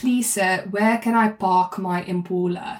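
slow, deliberate South African English accent. Getting back into a South African accent under pressure: South African accent. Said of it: "The way I get into it is I go".

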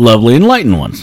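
rolling easily off the tongue. Showing the other speaker how to say the phrase: smooth, rolling off the tongue. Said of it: "You just have to say it like this".

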